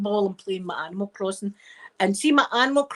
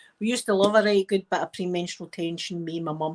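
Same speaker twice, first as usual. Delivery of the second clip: usual speaking voice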